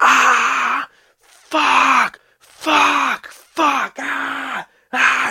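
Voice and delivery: mock shrill screams, very high, loud, long "ah". Describing arriving behind the fire truck and hearing him, imitating someone screaming. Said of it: "Just screaming so loud".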